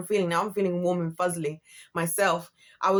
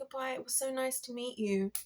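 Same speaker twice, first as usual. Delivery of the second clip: courteous, well-mannered, pitched-up tone; 7 semitones higher, 10 dB quieter than usual. Retelling how a man said goodbye: imitating a man's polite goodbye. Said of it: "the way I'm doing their voice".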